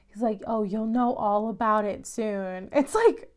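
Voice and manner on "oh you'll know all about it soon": put-on ominous tone, lower. Retelling what the dad says when his kid asks: imitating an ominous tone. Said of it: "really kinda ominous about it".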